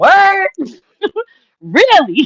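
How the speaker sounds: very high, swooping pitch, laughing through words. Retelling the husband's reaction from the kitchen: imitating husband laughing. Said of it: "he started laughing, and he was like".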